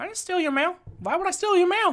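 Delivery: very high, squeaky-small bunny character voice. Acting a scene, denying stealing the crocodile's mail: Billy Bob the Bunny voice. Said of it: "you play Billy Bob the, the Bunny".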